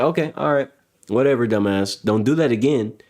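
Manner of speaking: blunt, straight, no-nonsense flat delivery. Retelling how Asmon answers a dumb chatter: imitating Asmon's no-bullshit reply. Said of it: "then it's like".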